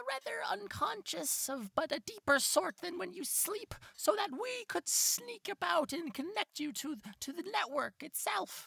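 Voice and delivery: very high, squeaky voice like a little rat.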